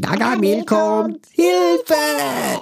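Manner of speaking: squeaky, very high cartoon voice. Demonstrating cartoon voices, the speaker plays a Smurf in a Smurf voice. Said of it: "jetzt sind wir total in Schlumpfhausen".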